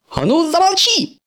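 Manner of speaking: very high, shrill, screeching yell. Narrator reads one character's line to another during their argument: yelling. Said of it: "завопил Кабуто".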